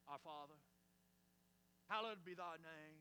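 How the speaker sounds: low, put-on, prayer-like voice and inflection. Speaker mimics how people change their voice when it's time to pray, in a mock prayer voice. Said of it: "they even change their voice inflection".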